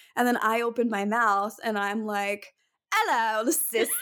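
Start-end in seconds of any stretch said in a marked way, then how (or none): 2.9-3.9 bad, fake, put-on British accent. Retelling how you greeted a British-accented person, in a bad British accent. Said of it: "I legitimately sound like that".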